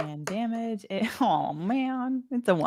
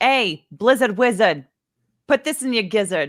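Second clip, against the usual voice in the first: loud, jeering shout; 6 dB louder than usual. Game player voicing her character confronting a giant snowman, shouting a taunt. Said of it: "she's gonna like shout at him".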